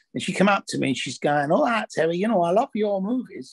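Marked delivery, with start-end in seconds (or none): 1.5-3.6 put-on really thick, heavy Mancunian accent, higher pitched. Retelling how a woman came up to you at a film festival, in a thick Mancunian Ava Cox voice. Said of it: "she's got this really thick Mancunian accent".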